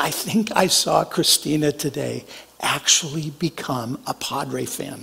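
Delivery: soft, half-whispered aside. Retelling what a son whispered on the phone: imitating someone whispering. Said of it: "he kinda whispered to me".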